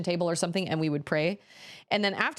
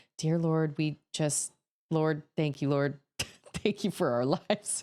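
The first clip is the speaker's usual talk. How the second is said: mock timid, stammering, stuttering voice, lower pitched; 3 semitones lower than usual. Retelling how a family member led family prayers: imitating a timid, stuttering prayer. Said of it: "a timid, stuttering prayer".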